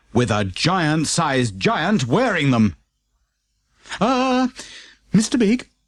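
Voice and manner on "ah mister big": tiny, very small, very high little voice. Narrator reading the postman's question to the giant at the door, in a very small voice. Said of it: "in a very small voice".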